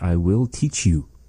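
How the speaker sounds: ordinary delivery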